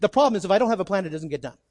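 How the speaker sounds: very fast, rushed, rattled-off, words run together. Addressing listeners about needing a plan, the speaker says it really fast. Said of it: "I said that really fast".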